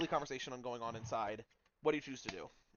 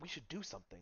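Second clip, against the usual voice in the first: hushed whisper, quieter; 11 dB quieter than usual. Voicing a patron in a whispered tavern corner conversation: whispering. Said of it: "a whispered conversation in the corner".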